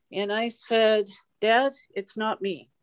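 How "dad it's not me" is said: ordinary talk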